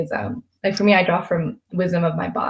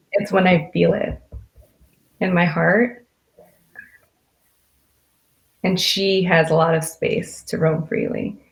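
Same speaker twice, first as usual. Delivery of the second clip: choked up, emotional. Answering where success is felt in the body, choked up and emotional. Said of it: "sorry, I got a little emotional there".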